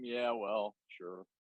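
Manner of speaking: put-on indifferent, unbothered, bemused, apathetic delivery. Showing how a friend answers anything: imitating Aaron's bemused, apathetic tone. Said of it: "bemused, apathetic sort of tone".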